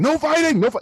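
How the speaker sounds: very high angry outburst. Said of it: "Killian loses his temper sometimes".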